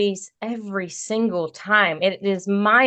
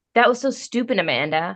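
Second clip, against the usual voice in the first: normal talking voice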